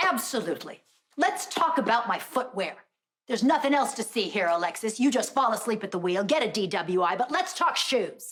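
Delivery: shouting. In an argument with someone who just arrived; yelling at someone. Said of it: "You're yelling at me".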